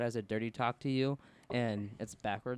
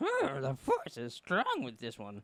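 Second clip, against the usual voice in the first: swooping, sing-song, musing voice, words rolled around. Joking about Yoda making his last Jedi: Yoda voice. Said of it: "he's like".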